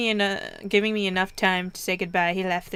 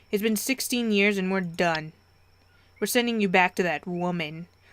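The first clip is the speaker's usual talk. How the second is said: ordinary delivery, nothing marked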